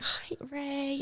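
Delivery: high, hushed whisper.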